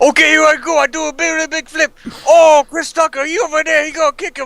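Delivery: very high-pitched, comic, dubbing voice-over style. Imagining the star dubbing his own movie: Jackie Chan voice acting. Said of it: "Jackie Chan, uh, voice acted over all his movies".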